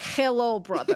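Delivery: put-on Russian accent, heavy on the word "hello". Reading out a note that began with a Russian accent: Russian accent. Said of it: "Moosh's note started with Russian accent".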